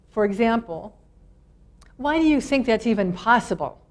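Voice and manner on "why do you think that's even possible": confrontational, challenging, accusing, attacking tone. Example of how inflection changes meaning, the question asked in an accusing, attacking tone. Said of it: "Sounds like an attack".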